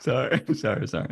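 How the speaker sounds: loud, giggly speech through laughter.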